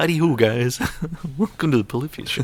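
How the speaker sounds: bad, high, squeaky put-on frog puppet voice. Joking that the guitar player is really Kermit, doing a bad Kermit impression. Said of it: "This is a really bad impression".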